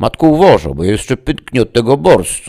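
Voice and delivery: very loud, swooping, playful joking teasing. A son speaks to his mother at the meal, joking. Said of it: "rzucił żartobliwie jej syn".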